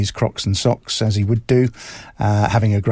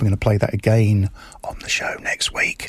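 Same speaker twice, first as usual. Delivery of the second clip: hushed whisper; 3 dB quieter than usual. Radio host on air, whispering because the boss is outside. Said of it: "I'm whispering because the boss is outside".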